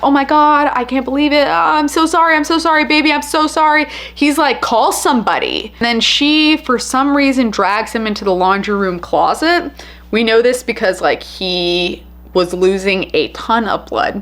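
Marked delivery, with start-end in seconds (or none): 0.0-3.8 high, frantic screaming apology. Recounting a stabbing, acting out the woman screaming on the phone, frantic screaming. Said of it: "she's screaming like".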